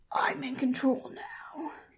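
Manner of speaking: acted rough, gravelly voice. Discussing a movie, the speaker quotes Vin Diesel's expected line: gruff angry Vin Diesel voice. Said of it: "gruff, like, angry voice".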